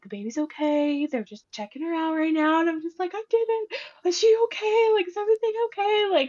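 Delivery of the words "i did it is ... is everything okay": put-on high, anxious sobbing through tears. Retelling what she said to her mom about the baby, retelling her own sobbing. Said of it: "I'm sobbing".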